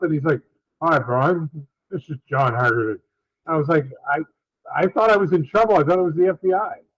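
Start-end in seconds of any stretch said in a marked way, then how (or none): 0.8-3.0 deep radio voiceover announcer voice. Retelling how a man introduced himself to Brian: John Haggerty's deep radio voiceover. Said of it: "he's doing a T V commercial".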